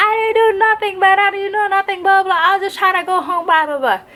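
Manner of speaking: put-on high drunken man's voice. Retelling what a handcuffed man at the station kept saying, imitating a drunk man. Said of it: "He was intoxicated, he was drunk".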